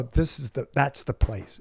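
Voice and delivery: ordinary talk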